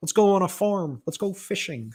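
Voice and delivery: bad, horrible, high cartoon-frog puppet voice. Imitating two Canadian alpha males, horrible voice like Kermit the Frog. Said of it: "it sounds like Kermit the Frog".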